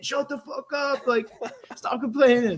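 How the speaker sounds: high-pitched, loud, angry scolding yell. Retelling what gets said to complaining players: imitating own yelling. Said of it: "I'm yelling at 'em".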